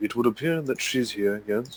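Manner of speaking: guarded, low-key, discreet, confiding tone. A player voicing their character, speaking into the Vox, in a really quiet tone. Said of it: "will say in a really quiet tone into the Vox".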